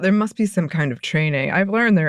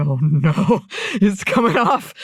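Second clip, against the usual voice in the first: acted, alarmed, drawn-out panicked cry, swooping and rising. Retelling watching a tree slip off the car roof: imitating own past panic. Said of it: "I'm panicking".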